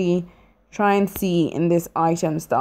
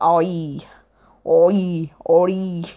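put-on mock pirate voice. Playing a game, trying out being a pirate: put-on pirate voice. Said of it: "Today I'm going to be a pirate".

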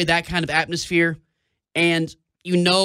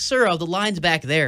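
ordinary talk

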